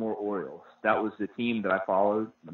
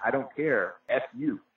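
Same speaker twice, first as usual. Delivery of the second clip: mock defiant yell, toned down, slow and mild; 3 semitones higher than usual.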